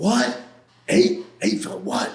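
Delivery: startled, shocked outcry of disbelief. Recounting being told of the charges against him: retelling a scream. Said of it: "I'm like screaming".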